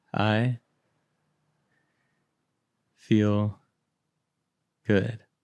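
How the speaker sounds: slow, unhurried, each word given its time. Trying the phrase after being told to say it: said slowly. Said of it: "I'm gonna try".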